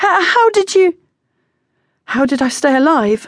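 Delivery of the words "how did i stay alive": shaky, halting, high trembling voice. Beth answers John, who cannot finish his question: shaky voice. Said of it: "Beth said shakily".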